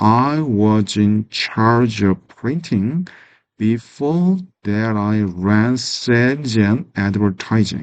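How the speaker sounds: slow, deliberately enunciated, careful reading. Reading an English sentence aloud with clear pronunciation: slow, careful reading. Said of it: "천천히 발음해서 읽겠습니다".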